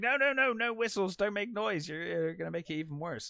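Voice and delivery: put-on frantic, panicked voice, fast and high. Recapping a shark scene, imitating Brody panicking. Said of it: "Brody panics".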